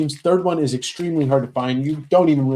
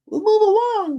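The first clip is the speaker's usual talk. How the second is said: eerie, squeaky, very high creepy puppet voice. Host repeating their own words to the chat, in a creepy Muppet voice. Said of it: "We'll move along like a Muppet. A creepy Muppet".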